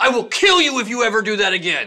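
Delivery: acting out a furious, angry voice. Retelling what a man said after being shouted at, acting out his fury. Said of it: "He was fucking furious".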